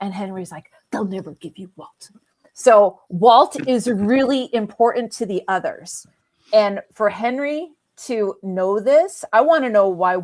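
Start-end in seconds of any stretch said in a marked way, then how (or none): 0.9-2.1 rushed, quick, hushed whisper. Recapping a TV episode, retelling one character whispering to Jack, whispering. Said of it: "and like he's like whispering".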